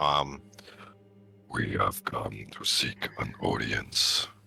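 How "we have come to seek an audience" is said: deep, rough giant voice. Speaker activates the astral mask and addresses the others, booming six-hundred-foot voice. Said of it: "booming the six hundred foot voice".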